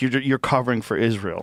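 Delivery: ordinary delivery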